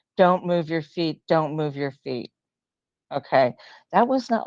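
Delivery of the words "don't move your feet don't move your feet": put-on big booming male voice. Retelling the words a voice spoke to them, retelling a big booming voice. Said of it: "that big booming voice that said".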